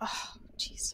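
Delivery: fed-up, grumpy, breathy, annoyed grumble. Voicing Callisto, who scowls at a player's decision: scowling, annoyed. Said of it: "Callisto kinda scowls at you and be like".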